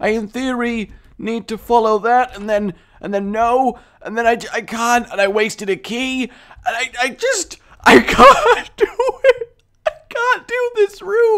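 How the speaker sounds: frightened voice. Stuck on a room after wasting a key, the speaker talks it through: scared. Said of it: "I am so scared right now".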